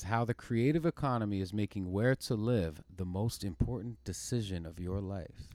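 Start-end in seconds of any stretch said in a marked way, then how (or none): none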